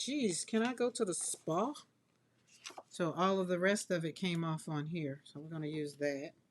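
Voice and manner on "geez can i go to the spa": whiny, put-upon complaining grumble, pitched up. Voicing the tool that needs a bath: complaining painting tool voice. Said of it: "It's like".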